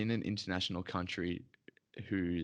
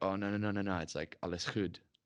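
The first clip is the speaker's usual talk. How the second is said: ordinary talk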